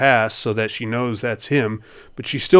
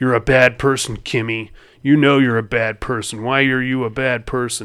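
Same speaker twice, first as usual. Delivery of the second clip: put-on taunting voice. Retelling a movie scene where a ranger on the radio taunts Kimmy, retelling Ranger Mark's taunting. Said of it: "he's being a real cocksucker to her".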